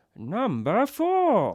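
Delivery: weird, squeaky, high voice, very loud. Announcing the next list entry to the other speaker: weird Kermit voice. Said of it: "It's like weird Kermit".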